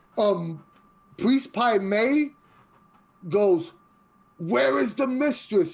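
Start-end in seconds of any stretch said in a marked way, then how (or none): 4.4-5.8 amplified, echoing, booming, loud voice, pitched up. Narrating a scene, voicing the priest calling across a courtyard, loud amplified voice. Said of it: "you hear the loud voice, almost like he had a microphone".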